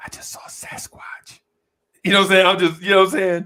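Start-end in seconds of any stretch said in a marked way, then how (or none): 0.0-1.4 slow, secretive, hushed whisper, very quiet. Retelling what he said outside a club after seeing a big girl: retold whisper. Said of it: "I go whisper like".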